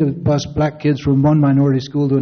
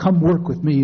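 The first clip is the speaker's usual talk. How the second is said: usual speaking voice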